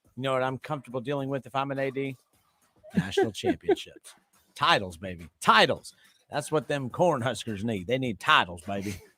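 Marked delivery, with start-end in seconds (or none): 3.0-9.0 put-on Nebraska accent. Imagining a Nebraska athletic director's reaction: put-on Nebraska accent. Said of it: "Why'd you give him that accent?".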